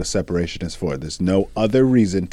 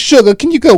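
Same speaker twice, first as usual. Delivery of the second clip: put-on very high, raised older woman's voice; 12 dB louder than usual. Retelling how older people asked a partner for something: imitating an older person.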